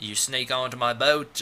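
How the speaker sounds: put-on Australian accent. Retelling a game, Yashimara catches the group sneaking onto his boat, Australian accent. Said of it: "or that's Australian".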